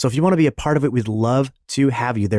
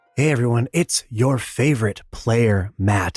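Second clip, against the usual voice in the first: hushed whisper; 2 semitones lower than usual. Greeting everyone with a baby sleeping in the next room, whispering. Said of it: "I am whispering once again".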